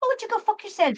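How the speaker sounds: English accent drifting into Irish. Irish speaker showing how British people tell you off politely: failed English accent, sounding Irish. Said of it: "that sounded more Irish".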